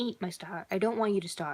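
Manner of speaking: ordinary delivery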